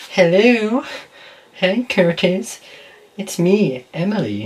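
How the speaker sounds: high-pitched put-on girly voice. Leaving a voicemail, posing as Emily, fake girl's voice. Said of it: "Trying to act on a girl's voice".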